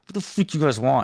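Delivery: annoyed, fed-up, angry, pissed-off tone. Recalling a call from people who had screwed him over, retelling an angry retort. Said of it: "I was just pissed".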